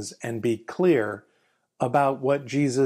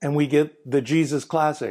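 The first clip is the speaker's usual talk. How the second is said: plain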